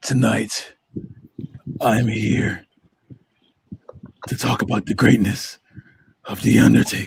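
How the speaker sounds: sinister, evil, demonic narrator voice. Introducing tonight's podcast topic, in a demonic narration voice. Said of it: "demonic uh, narration voice right there".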